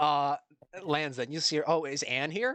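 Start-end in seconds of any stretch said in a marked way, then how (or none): 1.7-2.6 keen, eager, excited, perked-up tone. Voicing a pilot asking over comms if someone is present: sounds excited. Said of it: "this guy sounds excited".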